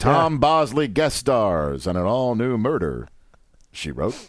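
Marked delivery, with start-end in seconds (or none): 2.6-4.2 clear pause right after the word "murder". Imitating how he said the show title, with a clear pause after murder. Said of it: "He would pronounce the comma in Murder. By pausing".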